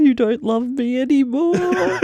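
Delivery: put-on, slow, pitiful, sulky, pathetic whimper. Imitating a partner upset over a dream: mock pathetic whining. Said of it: "You'd be pathetic about it".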